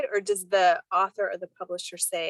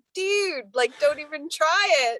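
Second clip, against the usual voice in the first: put-on yelling, higher; 9 semitones higher, 4 dB louder than usual. Retelling yelling at an audiobook narrator in the car: retelling own yell. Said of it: "yelling in the car".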